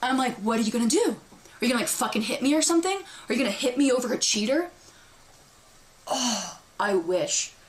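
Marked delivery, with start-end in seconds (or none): 0.4-4.7 mocking, taunting, goading tone. Speaker recounts being posted up on a car, retelling with a big smile. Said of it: "smiling as big as I can".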